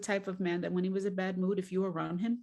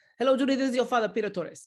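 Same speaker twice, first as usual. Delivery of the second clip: imitated Cuban accent; 4 semitones higher, 6 dB louder than usual. Recalling her father's phone greetings, the speaker imitates Peter Torres's Cuban accent. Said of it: "My father never got rid of his Cuban accent".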